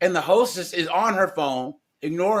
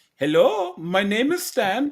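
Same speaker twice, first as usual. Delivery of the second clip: slow, drawn-out put-on Indian accent; 4 semitones higher than usual. Imitating a customer service agent answering the phone: imitating an Indian accent. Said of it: "I'd rather hear an Indian".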